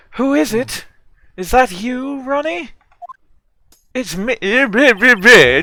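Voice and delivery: put-on stuck-up, snooty voice. Voicing a character in a scene: put-on stuck-up voice. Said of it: "more sort of stuck-up voice".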